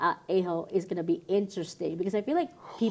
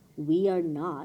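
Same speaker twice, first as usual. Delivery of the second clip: mock flat monotone, slower; 3 semitones lower than usual. Retelling the sister's reply to the brother's joke, imitating her most monotone voice. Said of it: "in the most monotone voice".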